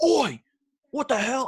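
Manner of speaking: put-on very high, agitated, drawn-out freak-out. Telling a train station story, the speaker acts out a stranger, imitating a man freaking out. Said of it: "he started freaking out that I was looking".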